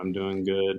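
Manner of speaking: flat monotone, dead flat. Acting out a coffee chat, answering in a monotone: imitating Chris Taylor's monotone. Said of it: "That's how monotone he is".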